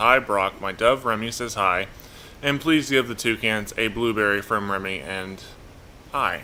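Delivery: ordinary delivery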